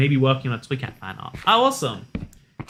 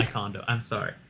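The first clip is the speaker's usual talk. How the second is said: plain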